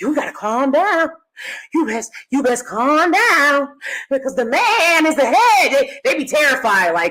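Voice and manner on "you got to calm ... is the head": put-on cautioning, higher-pitched older woman voice. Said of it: "and they'll be like".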